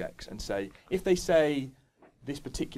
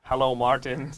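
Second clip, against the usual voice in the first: mechanical robot voice; 5 dB louder than usual. Playing the bot in a chatbot demo, in a robot voice. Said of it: "Can you do it in a robot voice for me".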